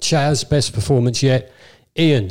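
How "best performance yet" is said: plain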